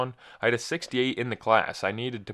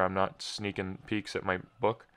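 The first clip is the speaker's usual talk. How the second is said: ordinary talk, nothing marked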